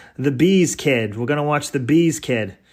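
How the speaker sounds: shoddy, really bad put-on Massachusetts accent. Retelling what the hometown crowd would say: bad Massachusetts accent. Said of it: "in a really shitty Massachusetts accent".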